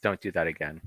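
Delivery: exasperated, weary, fed-up tone. Retelling how IT staff reacted to a ruined phone: imitating an exasperated eye-roll. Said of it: "rolling their eyes and being like".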